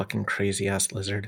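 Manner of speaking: very quiet mutter under the breath, barely audible. Muttering an insult about a lizard character: muttering under breath. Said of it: "And I say under my breath".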